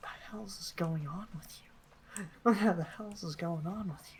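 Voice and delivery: whispering super quietly. Voicing Melanie who asks a distracted companion: whispering super quietly. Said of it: "Melanie just whispers, like, fucking super quietly".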